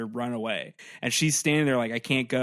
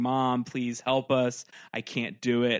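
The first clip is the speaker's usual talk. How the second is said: put-on crying voice, much slower. Retelling what she said at an empty doorway, imitating someone crying. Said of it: "she's crying and weeping and going".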